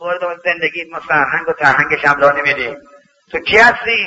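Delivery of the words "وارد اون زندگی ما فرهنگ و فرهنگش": ordinary delivery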